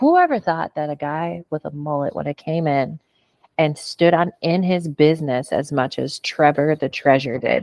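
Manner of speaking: usual speaking voice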